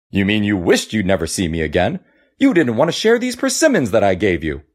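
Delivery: contemptuous, scornful scoff, fast and swooping. In the story, the monkey answers the crab, scoffing. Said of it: "the monkey scoffed".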